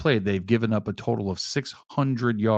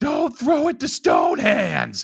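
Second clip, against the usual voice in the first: mock very high, swooping, high-pitched yell; 13 semitones higher, 3 dB louder than usual. Retelling yelling at the television during a game: imitating his own yell.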